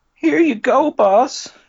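put-on dweeb voice. Directing a fellow actor, asking for more pitch: high-pitched dweeby Agent Falcon voice. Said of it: "More high-pitched".

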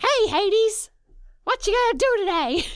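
very high, loud cartoon little-demon voice. Speaker describes how the little demons in their head sound; demon sidekick voice from Hades. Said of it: "they kind of sound like".

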